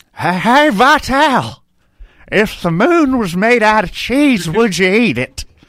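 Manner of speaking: very slow, high, drawn-out ballpark broadcaster voice. Arguing about baseball announcers, asking a silly question: impression of a Harry Caray impression. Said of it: "You're doing an impression of a guy doing an impression of Harry Carey".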